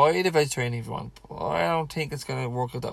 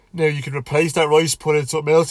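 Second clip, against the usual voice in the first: yawning, higher, louder; 3 semitones higher, 7 dB louder than usual. A speaker talking viewers through a daily meal plan, yawning. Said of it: "Excuse me, I'm yawning".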